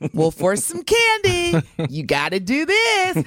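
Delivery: coaxing, high sing-song tone. Mocking a proposal as an offer of candy: mock stranger luring a child. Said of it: "That's what it sounds like".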